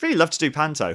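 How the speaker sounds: high, cheeky, eager voice.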